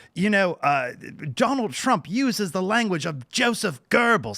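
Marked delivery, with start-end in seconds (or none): 1.3-4.4 high-pitched put-on British accent. Retelling what a guest said on a show, imitating a british accent. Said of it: "British accent".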